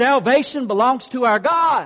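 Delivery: booming, very loud voice. Leading listeners to repeat after the speaker, saying it loud first. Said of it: "I'm going to say it loud".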